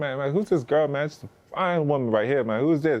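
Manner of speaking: high, excited, hyped-up voice.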